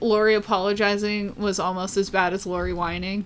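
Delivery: normal talking voice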